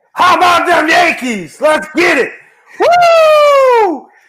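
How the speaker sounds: high, loud, excited, celebratory yelling.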